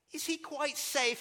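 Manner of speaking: put-on British accent, pitched very high. Quoting a woman's line from a story, in a put-on british accent. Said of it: "You've got to do an accent when you're doing Lewis".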